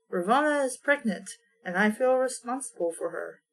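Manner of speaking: plain reading voice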